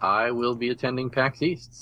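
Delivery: plain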